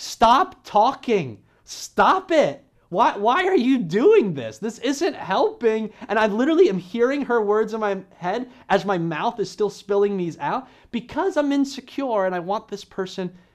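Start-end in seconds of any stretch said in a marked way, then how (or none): 0.0-5.9 loud, slow, scolding yell. Retelling the wife's words heard in one's head: imitating wife yelling. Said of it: "the words of my wife yelling".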